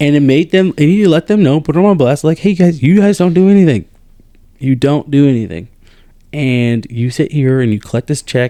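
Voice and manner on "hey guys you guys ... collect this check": snide, passive-aggressive sarcasm, acted out. Retelling a remark made to officers in his office: imitating a sarcastic comment. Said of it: "he made a passive aggressive, sarcastic comment".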